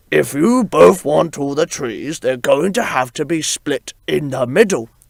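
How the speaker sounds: distinct storybook-style lion voice. Telling Billy a made-up story about giraffes, now voicing the lion: lion voice. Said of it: "He's got a different voice now".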